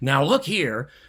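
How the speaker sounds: loud, pushy, demanding, insistent tone. Explaining a polite particle, demonstrating the tone to avoid: insistent tone. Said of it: "we don't want to have this insistent".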